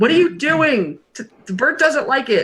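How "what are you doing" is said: yelling at a high pitch. Describing what another character is doing, the speaker acts out her yell. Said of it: "just yelling".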